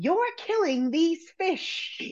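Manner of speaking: high, slow, mocking voice. Doing an impression on request, quoting a line: Elaine impression. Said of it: "You're doing, like, a female Jerry".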